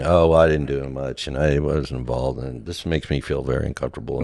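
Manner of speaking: put-on self-deprecating tone. Retelling own past reply when thanked: imitating own self-deprecating tone. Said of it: "this self-deprecating".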